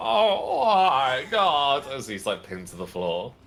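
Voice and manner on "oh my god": shrieking in pain, very high, loud scream. A game narrator voices a man pinned down with severed tendons, screaming. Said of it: "he's just screaming".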